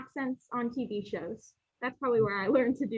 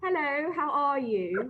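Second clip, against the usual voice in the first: put-on, fake English accent; 2 semitones higher than usual. Showing the other speaker what they can do: put-on English accent. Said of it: "That's my English accent".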